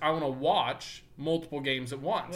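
ordinary talk, nothing marked

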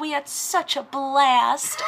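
put-on the littlest small-child voice, tiny little girl, slow. Retelling a recording of a little sister thanking Nana: imitating little sister's tiny voice. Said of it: "the littlest, littlest voice of my sister going".

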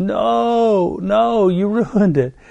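put-on high, very slow yell, "no" dragged out. Retelling a moment of yelling at the TV: retelling yelling at the TV. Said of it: "I was yelling at the T V".

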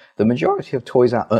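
voice cracking. Talking to viewers about a toy, voice cracking mid-sentence. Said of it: "my voice just broke there".

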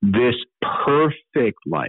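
slow, unhurried, deliberate, carefully weighted reading. A speaker rereads a Scripture verse to listeners, reading slowly. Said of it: "Let me read it again slowly".

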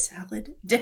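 soft, repeating half-whisper under the breath. Voicing a character quietly repeating what the forks are for: half-whispering. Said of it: "whispering it".

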